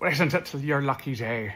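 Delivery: put-on pirate voice, sounding Irish. Wishing they'd said the line like a pirate, the speaker redoes it in an attempted pirate voice. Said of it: "I should have said that like a pirate".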